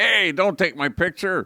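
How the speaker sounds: loud high yelling. Retelling a homeless man shouting at someone taking a selfie; imitating someone yelling. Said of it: "one of the guys starts yelling at Saul".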